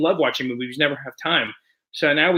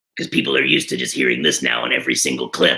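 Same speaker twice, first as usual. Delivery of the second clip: very low, deep, growling put-on character voice. Speaker explains people now only hear this voice on clips, Beetlejuice voice. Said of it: "(in Beetlejuice voice)".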